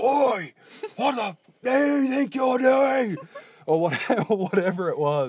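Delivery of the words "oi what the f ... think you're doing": put-on guttural Australian yell, much higher, louder. Retelling how you shouted at a cyclist, retelling a guttural Australian yell. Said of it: "just the like guttural".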